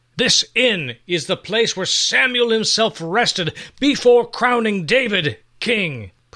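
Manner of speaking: very high, fiery, proud, desperate outcry. Narrator reading the innkeeper protesting as soldiers seize his inn, fiery pride and desperation. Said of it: "His voice was full of fiery pride and desperation".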